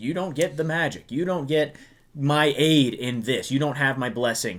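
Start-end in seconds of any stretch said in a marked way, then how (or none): none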